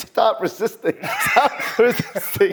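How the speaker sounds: firm, high, drawn-out, repeated authoritative delivery. Retelling the arrest on the plane, imitating screaming at the top of his lungs. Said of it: "I'm screaming at the top of my lungs".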